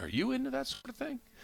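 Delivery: acted, dead-serious, hushed, very high-pitched delivery. Retelling how he replied to the sandwich remark, imitating him getting real serious. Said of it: "he gets real serious".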